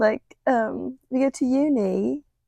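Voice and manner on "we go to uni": British accent impression. Doing a British accent after being asked, like a Love Island contestant: put-on British accent. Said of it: "I can do British somewhat".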